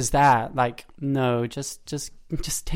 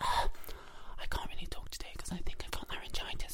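put-on whisper, higher and quieter; 6 semitones higher, 12 dB quieter than usual. Retelling singers at the canteen table claiming laryngitis: imitating someone whispering. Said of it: "so I'm whispering".

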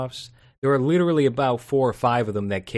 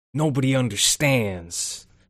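over-the-top masculine, dramatic, thickly manly delivery. Describing a dramatic sitcom episode: Anthony Anderson impression. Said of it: "That's my Anthony Anderson impression".

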